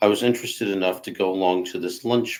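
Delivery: ordinary delivery, nothing marked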